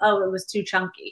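ordinary talk, nothing marked

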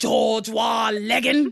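put-on British accent. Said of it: "you couldn't stop me from saying".

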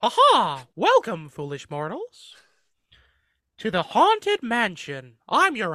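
very loud, high squeaky cartoon voice with big pitch swoops. Asked to voice a haunted mansion ghost host, a speaker chooses: Mickey Mouse voice. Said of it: "I'll do Mickey Mouse actually".

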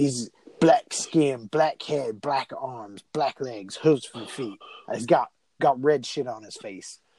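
put-on British accent with a speech impediment. Retelling how a character describes the demon: British accent with speech impediment. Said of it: "Why are you suddenly British with a speech impediment?".

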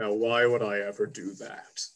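low, deep voice with laughter running through. A storyteller voices an unseen speaker to the players, deep laughing voice. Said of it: "you do hear a deep voice begin to laugh as he goes".

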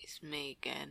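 very slow, menacing, ominous, drawn-out drawl. Repeating how the other speaker announced being back, slow mock-ominous repeat. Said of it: "that just sounds slow now".

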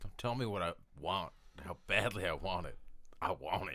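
very loud, booming put-on Southern US accent. Speaking in character during the game: southern accent. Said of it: "I don't know why I have a southern accent".

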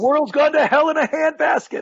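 put-on high, grumpy, cranky old-man voice, complaining. After complaining about social distancing, imitating their grandfather. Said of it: "now I sound like my grandfather".

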